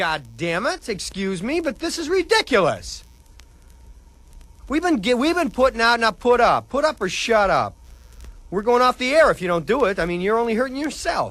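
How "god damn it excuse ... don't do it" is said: angry yelling, much higher and louder. Dj blowing up at listeners who aren't calling in, yelling angrily. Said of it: "I'm sorry for yelling".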